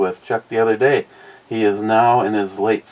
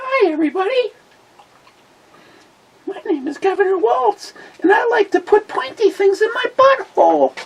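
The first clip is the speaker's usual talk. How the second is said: pitch pushed way up, puppet-like. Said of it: "That sounded more like Elmo".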